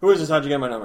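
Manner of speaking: blurted back to back, run together, no pause. Quoting how he talked, with no pause between the questions. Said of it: "no pause or nothing. Just, like, two sentences together".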